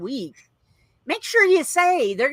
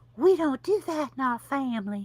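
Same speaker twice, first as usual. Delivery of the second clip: gentle, soft tone; 5 dB quieter than usual. Recalling a family rule she used to say, the speaker imitates her voice. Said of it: "she used to say in her voice".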